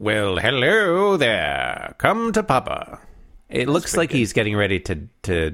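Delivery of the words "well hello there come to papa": slow, swooping, put-on old mid-Atlantic accent. Voicing an excited character in a comic panel, in a transatlantic accent. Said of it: "Do you want to do that in a transatlantic accent".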